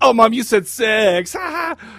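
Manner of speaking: put-on childish, teasing taunt in a kid's manner.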